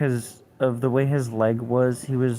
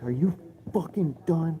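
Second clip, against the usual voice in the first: put-on screamed taunting tone, held in check, high-pitched; 5 semitones higher, 4 dB quieter than usual. Retelling a fight, reenacting own past words: imitating someone screaming. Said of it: "I just screamed in his face".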